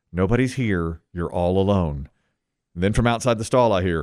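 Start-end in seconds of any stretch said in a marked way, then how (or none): 0.1-2.0 soft, quiet aside to oneself. Retelling a man's story of speaking to himself alone in a stall, retold quiet self-talk. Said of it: "And I say to myself quietly".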